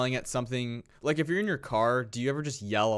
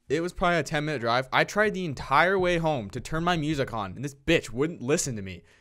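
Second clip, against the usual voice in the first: normal talking voice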